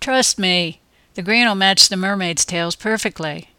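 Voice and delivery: ordinary talk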